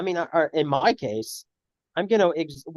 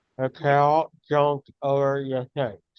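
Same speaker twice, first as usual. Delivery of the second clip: speech with tongue pressed down by a pen; 4 semitones lower than usual. Demonstrating an enunciation exercise to a friend, talking with pen on tongue. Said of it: "put the pen over the tongue".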